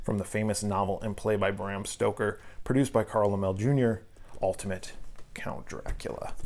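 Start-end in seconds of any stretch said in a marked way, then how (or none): none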